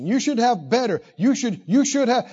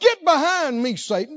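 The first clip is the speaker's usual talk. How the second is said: put-on yell, pitched higher; 5 semitones higher than usual. Retelling how Jesus wheels around at Peter: imitating Jesus yelling. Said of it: "He wheels around and he yells".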